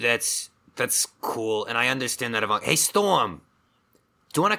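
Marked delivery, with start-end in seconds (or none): 2.6-4.6 high, raised shout. Turning to ask storm, who is right there, yelling. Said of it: "you do not have to yell".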